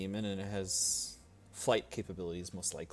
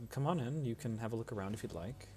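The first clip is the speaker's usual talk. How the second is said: ordinary talk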